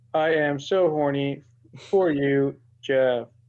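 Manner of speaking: very slow, mechanical robotic android voice. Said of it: "it's very C three P O in the sense it's like".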